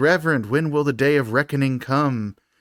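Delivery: normal talking voice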